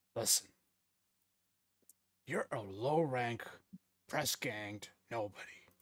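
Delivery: speaking under the breath. Having spotted Plug and Scourge in the distance, a character speaks, lowered voice. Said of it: "lowers his voice".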